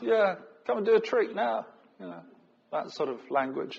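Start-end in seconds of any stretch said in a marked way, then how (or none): 0.0-1.7 high, sneering taunting tone. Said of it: "One sneering at Jesus".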